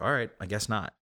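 ordinary talk

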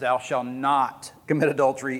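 "not" hit hard with strong stress. Quoting a commandment with emphasis: strong stress on the word not. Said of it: "Emphasis on the word not".

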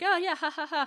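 high-pitched, nervous fake chuckle. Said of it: "doing that nervous".

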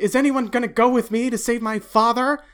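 put-on tough kid voice. Voicing a twelve-year-old setting out to save his father: toughened-up twelve-year-old. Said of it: "toughens up, this little twelve-year-old".

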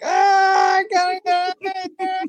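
mock shrill terrified scream, very high and loud. Retelling freaking out as a kid at a tank, before his dad carries him out: retelling a scared scream. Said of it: "I start screaming like".

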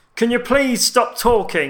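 very high, loud nerdy-sounding voice. Retelling what a stranger across the cinema said during the film: loud nerdy voice. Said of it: "He did have that kind of nerdy voice".

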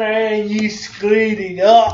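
put-on Scottish accent. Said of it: "Did you say screwed it up like a Scotsman?".

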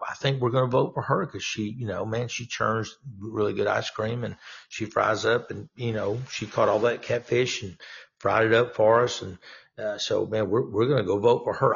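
usual speaking voice

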